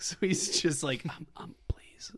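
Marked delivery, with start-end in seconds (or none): 1.0-2.1 put-on halting, breathy whisper, pleading. Acting out a malnourished dinner guest who cannot speak: imitating someone begging for a vitamin. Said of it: "keeps begging my, uh, relatives for a vitamin".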